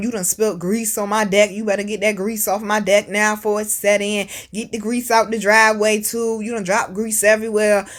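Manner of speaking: normal talking voice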